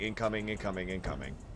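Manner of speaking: low, soft, robotic announcement-style voice. Recalling the sirens going off for new soldiers in the military: robot voice. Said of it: "it's a robot voice saying".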